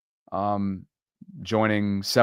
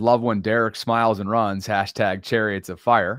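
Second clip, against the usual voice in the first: plain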